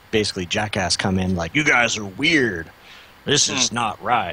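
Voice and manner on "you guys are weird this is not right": put-on, laid-on American accent. Acting out a guy coming into a safe environment, put-on American accent. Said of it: "I don't know why he has like an American accent".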